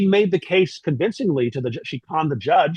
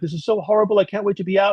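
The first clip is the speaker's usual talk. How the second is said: put-on weepy crying voice, through tears; 4 semitones higher than usual. Retelling the sister's daily calls from jail: imitating someone crying. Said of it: "She calls me collect from jail every day, crying".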